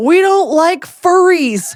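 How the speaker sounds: put-on loud, very slow, drawn-out shout. Retelling what a friend shouted out a car window: imitating someone shouting.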